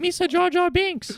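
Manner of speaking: very high-pitched voice. Discussing Jar Jar, one speaker does a Jar Jar Binks voice. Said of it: "talks like a kind of like high pitched Rastafarian voice".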